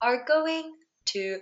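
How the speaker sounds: ordinary delivery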